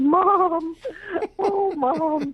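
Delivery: put-on, very high, tearful sobbing, "Mom" stretched long. Retelling what a client cried out after bursting into tears: imitating crying out. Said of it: "burst into tears and went".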